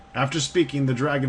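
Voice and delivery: ordinary talk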